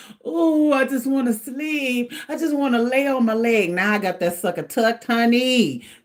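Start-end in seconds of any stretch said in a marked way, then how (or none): 0.3-3.7 acted-out tearful, crying voice. Retelling lying in bed unable to sleep, imitating own past crying. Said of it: "Laying in the bed just crying like".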